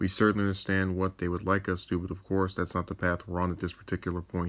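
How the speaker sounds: normal talking voice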